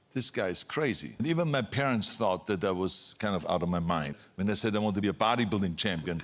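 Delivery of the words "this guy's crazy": ordinary talk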